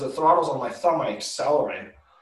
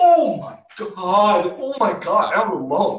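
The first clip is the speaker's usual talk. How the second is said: panicked, high, loud, drawn-out scream; 7 semitones higher, 6 dB louder than usual. Telling about being hit and lying alone, retelling own scream. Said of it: "I was screaming".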